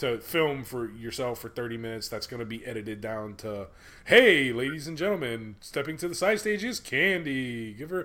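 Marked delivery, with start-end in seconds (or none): 4.0-8.1 MC-style DJ announcer voice. Retelling how an actor voices a strip club DJ: imitating a strip club DJ announcer voice. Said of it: "that's the voice he uses".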